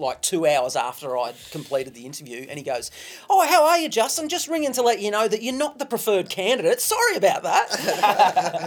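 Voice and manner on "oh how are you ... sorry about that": mock very high, breezy, jovial voice, swooping. Retelling a phone call after a job interview: imitating a jovial caller. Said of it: "this jovial phone call".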